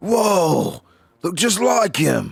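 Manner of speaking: cartoon turtle voice. Asked to do it again, speaker repeats the line in a Ninja Turtle-like cartoon voice. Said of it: "can you do it again?".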